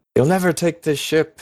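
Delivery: rough, gruff, high-pitched goblin battle shout. A narrator voices a fighter on the ship yelling in Goblin, gruff yell. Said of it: "You hear one gruff voice yell in Goblin".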